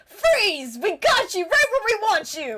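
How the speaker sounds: obnoxious, gloating voice, high and swooping. Narrating a scene, the storyteller voices Lucid in an obnoxious voice. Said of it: "all you hear is Lucid's obnoxious voice".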